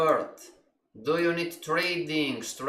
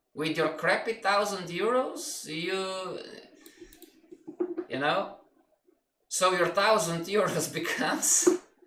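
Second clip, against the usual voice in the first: talking while cracking up, laughing through words; 3 semitones higher than usual. Speaker describing an imagined trader to a listener, laughing while talking. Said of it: "I'm laughing".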